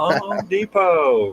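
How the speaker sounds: put-on excited childlike shriek, very high and very loud. Parent retelling the daughter in the store: imitating a scream. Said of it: "she's just screaming".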